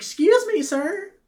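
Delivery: put-on very high-pitched, girlish calling voice. Retelling someone calling out at the van door: imitating a girl's voice. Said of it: "in a girl's voice".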